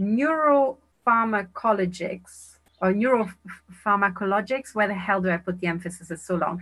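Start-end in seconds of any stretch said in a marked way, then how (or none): 0.0-4.7 very slow, careful, drawn-out sounding-out, piece by piece. Trying to pronounce a long word, speaker says it very slowly. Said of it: "Let's just say it so slowly".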